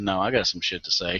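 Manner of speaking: ordinary delivery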